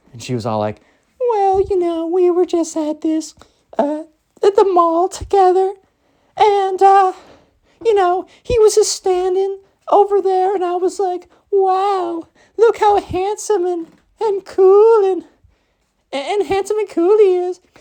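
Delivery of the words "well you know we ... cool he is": very high, slow, put-on girlish voice, wow stretched. Retelling the girl's answer about meeting: put-on girl's voice. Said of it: "my version, 'cause I'm trying".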